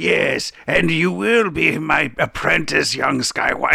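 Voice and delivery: dragged out slow and creaky. Retelling a Robot Chicken scene with the Emperor from Star Wars: imitating the Emperor. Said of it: "the Emperor on Star Wars".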